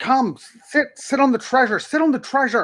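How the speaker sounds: frantic, panicked, very high, almost screaming. A panicked woman urges the listener to come over, panicked near-scream. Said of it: "She's almost screaming it at you".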